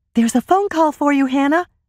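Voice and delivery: very high, breathless, out-of-breath voice. A young partner rushes through the door into the kitchen: breathless announcement. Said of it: "Lisa announced breathlessly".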